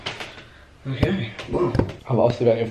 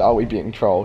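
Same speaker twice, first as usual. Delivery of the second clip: normal talking voice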